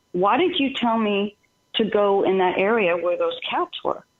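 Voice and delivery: ordinary talk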